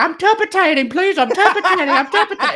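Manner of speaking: very high dog voice with mangled, impeded speech. Retelling BJ pretending to be a dog in a car: imitating BJ's dog voice with a speech impediment. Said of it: "he's pretending to be the dog, but it's got, like, a speech impediment".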